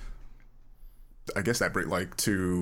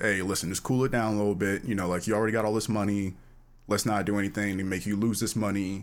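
normal talking voice

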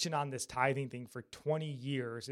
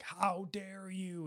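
preacher-style yell, pitched higher; 6 semitones higher, 6 dB quieter than usual. Retelling a sermon where he screams at men from the stage: imitating Driscoll yelling. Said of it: "he's, like, yelling it".

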